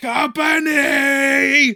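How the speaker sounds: high-pitched, loud, drawn-out yell.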